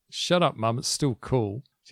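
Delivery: ordinary delivery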